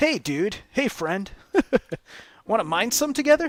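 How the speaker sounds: laid-back surfer dude. Describing a game companion you can give orders to, surfer dude voice. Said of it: "he talks like a surfer guy".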